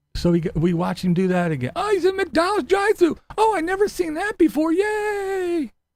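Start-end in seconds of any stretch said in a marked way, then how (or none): 1.7-5.6 very high, put-on, sarcastic cheering. Imitating the viewers who keep watching the videos: mocking imitation of viewers. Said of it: "The same people that said him go".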